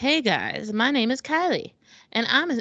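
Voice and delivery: high, mocking read-out voice. Reading a listener's question aloud in a voice that sounds mocking. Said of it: "It sounds like you're mocking her".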